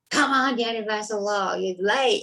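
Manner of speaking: full-throated, demanding scream at full volume. Retelling screaming from behind prison bars after miscounting days: imitating own past scream. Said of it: "and I'm screaming".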